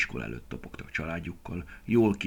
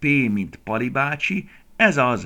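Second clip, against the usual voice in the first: very loud, high, eager excited shout; 6 semitones higher, 8 dB louder than usual. Narrator reads a girl finding a number in the phone book, exclaiming. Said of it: "kiáltotta".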